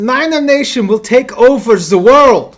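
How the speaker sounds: very loud, very high, shrill put-on German accent. Retelling a german fan announcing the 49ers draft pick, german accent. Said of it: "He has a sick German accent".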